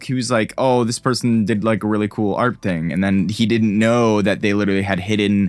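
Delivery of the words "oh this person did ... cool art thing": ordinary talk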